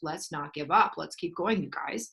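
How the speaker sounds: ordinary talk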